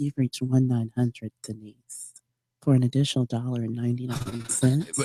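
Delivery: fake seductive voice. Redoing a one nine hundred line greeting: put-on sexy voice. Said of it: "Is that supposed to be your sexy voice?".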